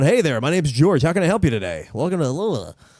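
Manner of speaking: resigned, defeated, given-up customer-service voice.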